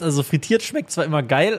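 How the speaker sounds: voice cracking. Saying fried food always tastes great, voice cracking. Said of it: "Voice Crack".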